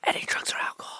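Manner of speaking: soft, hushed whisper. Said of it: "leans in and whispers".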